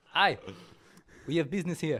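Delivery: put-on loud, high Russian accent. Voicing a character who says they have business: russian accent. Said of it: "That's Russian".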